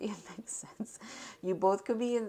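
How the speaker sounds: giggly, amused, laughing through the words. Reading tarot cards aloud for the listener, laughing while talking. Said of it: "I'm sorry I'm laughing".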